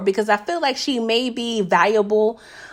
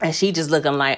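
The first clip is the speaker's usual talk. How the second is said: ordinary talk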